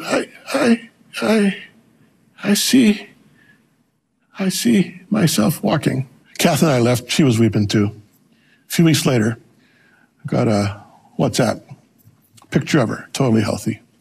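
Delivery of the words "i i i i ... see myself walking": tiny, very high, very slow, drawn-out little voice. Retelling a sick woman's words while praying over her: imitating a little voice. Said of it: "in a little voice in Chichewa".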